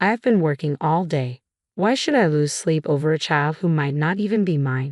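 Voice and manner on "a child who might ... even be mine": ordinary delivery, nothing marked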